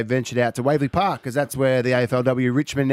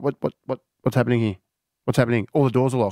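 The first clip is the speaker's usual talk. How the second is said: put-on bewildered, fast, confused stammering, tripping over words. Retelling being locked out of his car: imitating his own confusion. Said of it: "I'm like".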